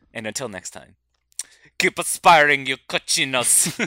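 put-on Italian accent. Signing off the show to listeners in an italian accent. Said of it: "that was a flawless Italian accent".

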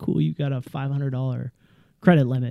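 ordinary delivery

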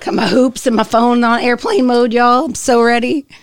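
nervous, jittery delivery. Someone getting ready before recording starts, sounding nervous. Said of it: "You sound nervous".

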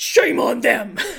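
raw, rough, full-blast outburst, very loud. Recounting a movie scene, Nicolas Cage shouting. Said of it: "Just shouts".

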